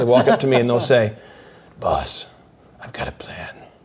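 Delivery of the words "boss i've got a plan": slow, whispered, put-on deep voice. Retelling a nervous employee pitching a plan to the boss, in a Batman impersonation whisper. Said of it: "in that like Batman impersonation mode".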